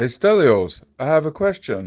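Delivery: very calm, smooth, polite, composed tone. Asking a pretend question while imitating Hussein's calm voice. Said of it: "I was just trying to speak like Hussein".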